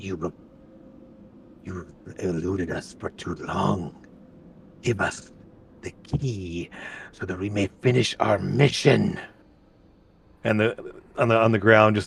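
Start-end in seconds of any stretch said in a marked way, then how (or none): 0.0-9.2 spoken low and soft. Voicing a figure heard speaking in Draconic as people move into the space, in a low tone. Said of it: "in a low tone there in Draconic".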